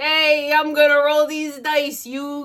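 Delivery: put-on high-pitched New York accent. Quoting Joey from the 4Kids dub, in a New York accent. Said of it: "in a New York accent".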